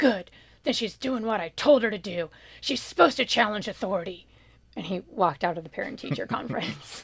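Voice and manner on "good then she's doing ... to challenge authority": very gruff, rough Alaska dad voice. Retelling her dad pounding the table at a parent-teacher conference: super gruff Alaska dad voice. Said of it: "said in his super gruff Alaska dad voice".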